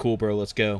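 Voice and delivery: ordinary talk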